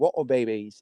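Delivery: mocking, put-on British accent. Uncles teasing their niece about a movie she liked, in a British accent. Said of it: "they would say it for some reason in a British accent".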